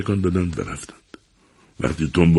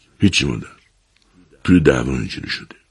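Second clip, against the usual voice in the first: ordinary delivery, nothing marked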